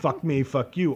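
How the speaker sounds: ordinary delivery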